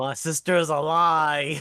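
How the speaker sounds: shouting. Answering the game master's question in character, yelling. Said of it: "are you yelling?".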